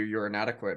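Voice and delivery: ordinary talk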